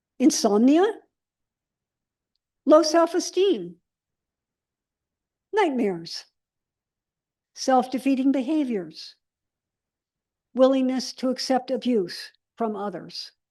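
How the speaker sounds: slow, unhurried reading. Reading a list of trauma symptoms to listeners, reading slowly. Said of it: "I'm going to read them slowly".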